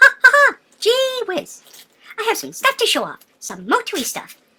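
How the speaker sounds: very high, loud, swooping squeaky cartoon voice. Speaker introduces a video to everybody, in a Canadian Mickey Mouse voice. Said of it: "the Canadian Mickey Mouse".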